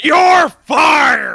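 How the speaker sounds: gravelly put-on voice. Doing a requested impression while firing someone: Vince McMahon impression. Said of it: "in his best Vince McMahon".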